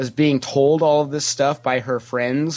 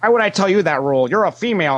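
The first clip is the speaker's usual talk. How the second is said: defensive snapping tone, higher; 6 semitones higher than usual. Retelling own past reply to a question about a rule: imitating own defensive retort. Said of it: "I got all defensive".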